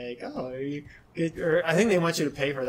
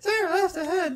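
put-on cartoon voice, much higher pitch. Recalling a SpongeBob TomTom giving directions, doing a SpongeBob impression. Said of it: "my SpongeBob impression".

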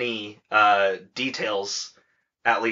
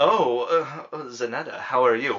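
mock drunk voice, acted drunk. Acting out a scene from the imagined play: acting drunk. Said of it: "he's drunk and just like".

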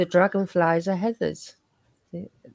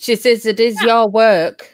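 higher-pitched, louder scolding voice. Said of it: "I love how you say it in that voice too, like you scolding me like she would".

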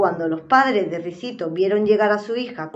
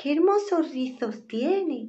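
sweet, playful voice, soft and high; 6 semitones higher, 5 dB quieter than usual. The curious little bear exclaims over Ricitos de Oro's curls: sweet, playful voice. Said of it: "La voz del osito sonó tan dulce y juguetona".

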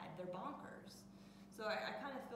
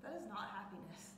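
ordinary talk

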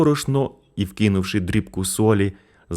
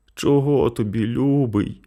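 faint, weak, feeble female voice, sickly and drowsy; 4 semitones higher than usual. A sick mother, just woken, answers her son: weak voice. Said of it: "запитала хвора слабким голосом".

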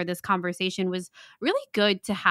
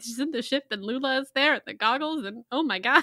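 mock tearful near-sob, pitched up, near tears; 6 semitones higher than usual. Retelling a voice memo sent after finishing the finale: imitating own near-sobbing voice memo. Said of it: "really on the verge of, like, full on sobbing".

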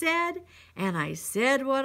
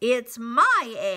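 sputtering, much slower; 2 semitones lower, 5 dB louder than usual. The bird, hearing her egg crack, sputters. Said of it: "she sputtered".

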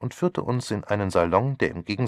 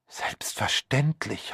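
breathed, breathy, pleasantly excited, thrilled; 6 semitones higher than usual. A woman answers Poirot's remark that it is strictly confidential, breathed, pleasantly excited. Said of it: "hauchte Miss Lawson offensichtlich angenehm erregt".

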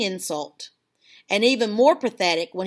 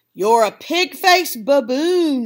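loud, sudden yell; 4 semitones higher, 5 dB louder than usual. Stacy Bonet, a familiar voice, at the narrator, yelling. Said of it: "yelled a familiar voice".

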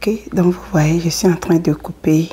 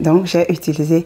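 ordinary delivery

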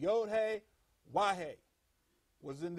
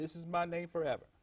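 usual speaking voice

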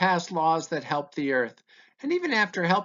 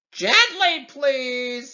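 high, loud, screeching bird voice; 6 semitones higher, 5 dB louder than usual. Narrator reads the eagle's words as the rider grabs its feathers: screeching. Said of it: "he screeches".

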